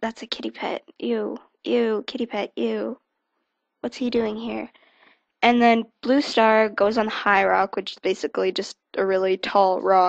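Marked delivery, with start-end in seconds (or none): 0.0-4.7 quiet, half-whispered voice. Retelling a story where cats gossip about a newcomer: imitating cats half-whispering. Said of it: "all these other cats around the camp are whispering".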